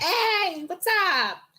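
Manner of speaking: very high-pitched cartoon penguin voice and accent. Joking about the opponents, doing a penguin greeting: penguin accent. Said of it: "penguin going".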